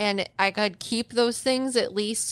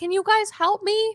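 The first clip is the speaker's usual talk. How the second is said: very high, drawn-out, put-on raised-voice yell; 12 semitones higher than usual. Retelling a call heard from the floor below: imitating someone yelling. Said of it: "I thought you yelled".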